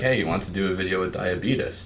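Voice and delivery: ordinary talk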